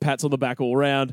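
normal talking voice

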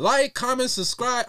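very loud, very high-pitched delivery. Closing the podcast's first episode, the host signs off: speaking loudly. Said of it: "I'm really loud right now".

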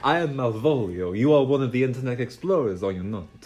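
fake, put-on Italian accent. Voicing the ringmaster introducing himself: put-on Italian accent. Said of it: "A bit Italian, isn't it?".

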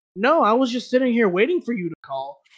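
heavy sarcasm in every word. A customer service worker imagines answering a caller, acting out a sarcastic reply. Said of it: "I'd be so sarcastic".

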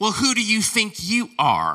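put-on critical, swooping Southern old woman voice. Retelling everybody criticizing Aaron, in Southern old woman voice. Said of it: "Why do I go into Southern old woman voice".

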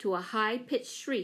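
plain reading voice

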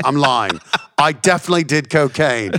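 bad put-on Australian accent. Retelling a comedian's stand-up bit: awful Australian accent as Jim Jefferies. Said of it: "my awful Australian accent for doing Jim's bit".

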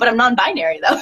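ordinary talk, nothing marked

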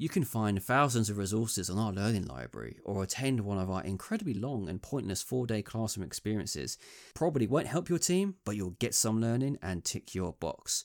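ordinary delivery

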